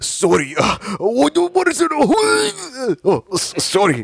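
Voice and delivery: thick put-on Japanese accent, very high and very slow. Imitating someone in a video who apologizes: put-on Japanese accent. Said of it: "going so hard with his Japanese accent".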